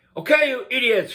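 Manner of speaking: put-on mad old-man lecturing tone.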